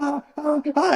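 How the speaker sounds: very high, panicked, squealing ah-ah-ah.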